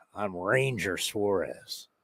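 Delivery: very low, very quiet Texas gunfighter drawl. Saying a name aloud while playing around with voices: southern Texas drawl. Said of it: "you're mixing a little bit of like southern southern Texas".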